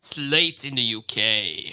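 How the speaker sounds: British accent with voice dropped low. Wrapping up at the hour mark, the speaker tries a new British accent. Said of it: "that's my new British accent".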